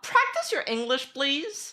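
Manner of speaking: snooty condescending tone. Speaker retells what a woman told others about their english, mocking a rude tone. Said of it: "It sounded hella rude".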